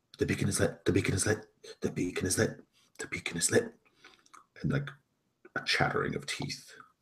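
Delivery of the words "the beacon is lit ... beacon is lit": faint, weak, rasping undead voice, repeated. As the narrator, voice what the players hear from a sarcophagus in a weak, raspy voice. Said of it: "a weak, raspy voice".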